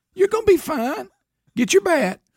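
put-on soothing voice. Mocking how the judges spoke to a contestant: imitating judges comforting a child. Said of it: "You're talking to a child".

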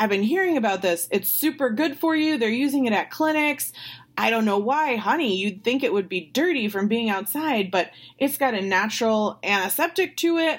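high, thrilled, bubbling, super-excited voice. Retelling how a man reacted to her suggestion, imitating someone sounding excited. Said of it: "he gets like super excited".

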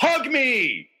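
mock full-throated, very high top-of-lungs yell. Retelling yelling at a roommate after a double play: imitating own past yell. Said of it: "at the top of my voice yelling".

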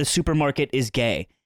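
ordinary talk, nothing marked

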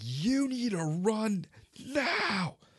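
put-on, very slow, full-volume, high, urgent yell. Recounting urging someone carrying a throw ring to run: retelling a full-volume shout. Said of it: "I am shouting as loud as I can".

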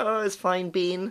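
bad put-on New Zealand accent, high pitch. Speaker retells greeting a receptionist friend, who answers: imitating Sandra's New Zealand accent. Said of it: "in her New Zealand accent".

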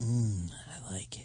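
creepy voice, very quiet and very slow. Taking a turn in a contest to say the line creepiest: creepy voice. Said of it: "let's see who can say it creepier".

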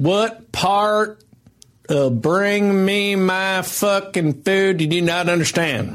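put-on rough, high backwoods Southern accent. Trying out voices, one speaker does a line in a Southern accent. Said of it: "that's that Southern one that you like".

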